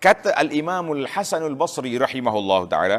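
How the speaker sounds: ordinary delivery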